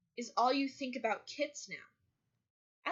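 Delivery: play-acted, very slow, furious voice. Recapping a story, acting out a character's reply: mock-angry retort. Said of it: "very angrily".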